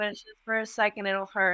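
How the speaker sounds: ordinary delivery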